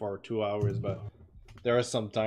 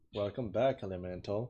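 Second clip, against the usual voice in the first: usual speaking voice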